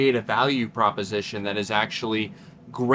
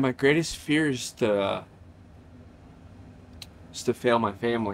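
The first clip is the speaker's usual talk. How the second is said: voice holding back tears; 4 dB quieter than usual. Answering a question from another speaker, holding back tears. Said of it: "Say this without crying".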